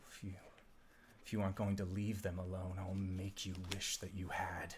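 pure, very soft half-whisper. Voicing a creature that speaks directly into a character's mind: half-whispering. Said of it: "you hear it whisper".

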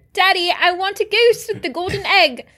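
shrill, very loud, bratty voice. Speaker mimicking the girl from Willy Wonka during a chat, bad Veruca Salt impression. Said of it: "That's a terrible accent".

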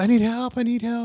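high, panicked, desperate cry.

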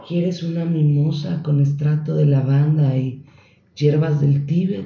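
mock soft-spoken voice. Mimicking how spa staff talk to customers, imitating soft-spoken spa staff. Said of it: "porque hablan bajito".

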